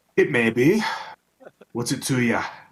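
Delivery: put-on Scottish-accented character voice. Asked if that's a Scottish accent, answering in character: Scottish accent. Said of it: "Is that a Scottish accent I hear in there?".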